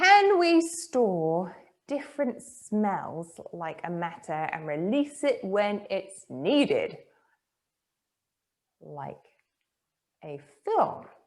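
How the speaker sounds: very slow, careful, low-pitched reading. Speaker reads a submitted question off the screen, reading very slowly. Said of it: "I'm reading this very slowly".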